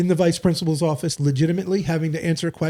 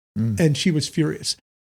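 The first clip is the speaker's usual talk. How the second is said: plain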